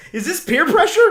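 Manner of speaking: high, loud, stunned disbelief.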